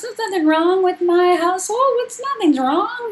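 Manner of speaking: put-on insistent teen voice, pitched high.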